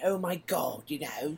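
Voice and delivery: put-on soft, wacky English accent. Describing a game character's original voice, imitating it: wacky Russell Brand-like Englishman. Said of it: "like this wacky Englishman".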